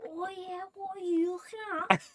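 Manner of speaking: fake tough Scouse accent. Speaker mimics schoolboys who weren't even born in Liverpool: fake Scouse accent. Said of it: "put on a Scouse accent".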